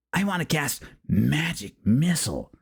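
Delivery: slow, whiny little snivelling voice. Recalling a D and D session, the speaker imitates the mage player, a snivelly guy. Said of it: "the little snivelly guy".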